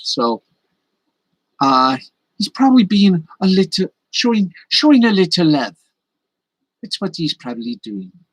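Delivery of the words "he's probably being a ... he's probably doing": bad put-on Scottish accent, high and swooping. Explaining why a cat nibbles, in a lame scottish accent. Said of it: "why am I doing a Scot a lame Scottish accent".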